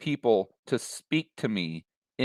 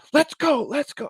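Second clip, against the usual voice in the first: put-on very high, screamed, shouting voice; 3 dB louder than usual. Speaker acting out an agent hurrying people in line, imitating someone yelling orders. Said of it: "just screaming and yelling and giving these orders".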